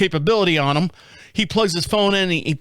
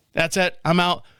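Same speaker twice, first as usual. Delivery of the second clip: usual speaking voice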